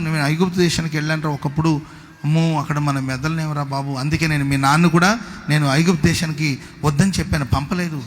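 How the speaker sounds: plain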